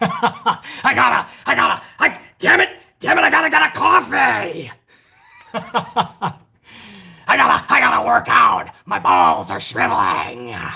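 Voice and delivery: slow with big swoops. Doing an impression after a chat viewer asks for one: Vince impression. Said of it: "I'm giving you Vince impressions".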